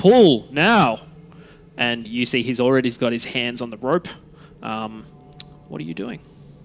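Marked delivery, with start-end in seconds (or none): 0.0-1.0 very loud, high, full-throated shout. Voicing a character urging others to pull the rope: yelling. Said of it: "You hear [name] just yelling".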